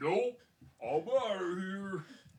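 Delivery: very loud, high-pitched put-on troll voice. Telling the group how the troll reacts, in a troll voice. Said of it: "That was a great troll voice".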